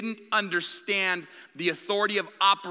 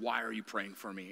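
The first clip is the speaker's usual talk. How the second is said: very deep, very soft, hushed demonic voice; 8 semitones lower, 12 dB quieter than usual. Retelling praying over a woman when a voice came out of her: demonic voice. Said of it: "this demonic voice came out and said".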